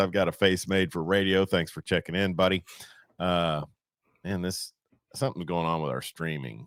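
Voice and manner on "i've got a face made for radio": normal talking voice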